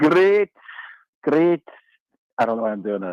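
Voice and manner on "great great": put-on Scottish accent. Answering a greeting on a radio call: put-on scottish accent. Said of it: "are you Irish now?".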